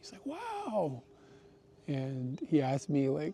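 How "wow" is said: put-on excited child voice, higher and quieter. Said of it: "super excited".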